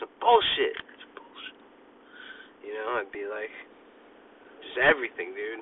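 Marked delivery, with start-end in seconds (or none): 0.0-1.6 grumbled, hushed mutter under the breath, barely aloud. Retelling a childhood habit of repeating things: imitating muttering under breath. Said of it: "under my breath".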